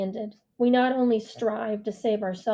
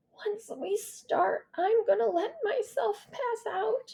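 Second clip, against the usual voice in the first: feeble half-whisper, pitched very high, slow; 12 semitones higher, 5 dB quieter than usual. Reading a story aloud, an injured character speaking: half-whispery, weak voice. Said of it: "she says in a whispery, weak voice".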